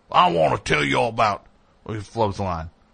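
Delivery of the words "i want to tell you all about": put-on Southern colonel accent. Retelling a commercial shoot, imitating Ray Liotta's Colonel Sanders accent. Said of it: "I watched him develop that accent".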